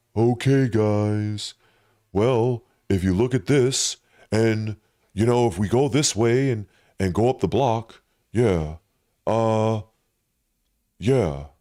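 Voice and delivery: flat deadpan monotone. Imitating a creator's dry monotone way of talking: imitating a monotone creator. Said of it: "I would definitely say he's monotoned".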